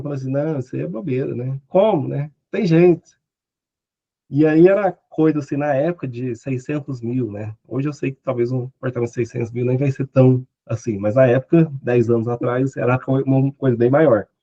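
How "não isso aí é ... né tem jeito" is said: dismissive, talking through laughter. Retelling a colleague's reply to his wife: imitating a laughing reply. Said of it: "e ficou rindo".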